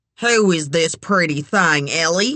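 plain reading voice

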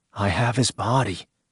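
ordinary delivery

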